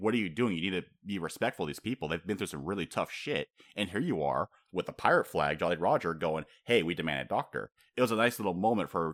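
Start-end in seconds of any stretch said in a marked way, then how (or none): none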